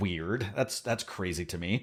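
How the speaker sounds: hushed, very quiet sarcastic delivery. Reacting to a team's high score at its home show: sarcastic tone. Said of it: "I'm being sarcastic".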